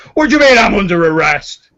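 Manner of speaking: gruff, loud, very high-pitched outraged orc voice. An orc near the bar protests being arrested, outraged gruff orc voice. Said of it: "an outraged orc gruff voice from over in the direction of the bar goes".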